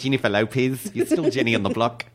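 put-on Australian accent drifting New Zealand. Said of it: "I'm doing a little more New Zealand than Australian".

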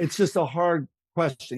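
ordinary delivery

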